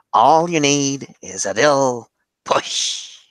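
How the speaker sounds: sinister clown villain voice. Making a point about leftists to someone you are talking with, do a Joker impression. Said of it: "pretty good Joker impression".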